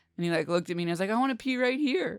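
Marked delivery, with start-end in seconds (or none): 1.1-2.2 put-on grinning little kid voice, pitched up. Retelling a kid's request to pee outside: imitating a grinning kid. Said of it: "all grinning".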